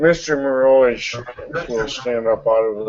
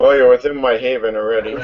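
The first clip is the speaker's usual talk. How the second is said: louder and faster. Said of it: "I didn't hear what you said".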